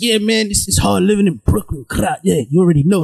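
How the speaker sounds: imitated deep voice. Describing a guy's online videos: imitating a guy's changed voice. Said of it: "Why are you changing your voice?".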